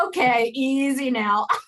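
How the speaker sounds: teasing, dry, sarcastic delivery. Retelling a partner's jealous reaction at the binoculars: imitating a sarcastic remark. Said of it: "it comes out in a very sarcastic way".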